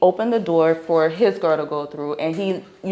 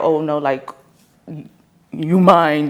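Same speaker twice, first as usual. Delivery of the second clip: mock possessive tone, lower; 3 semitones lower than usual. Imitating a jealous partner who claims ownership: imitating an overly possessive partner. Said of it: "overly possessive".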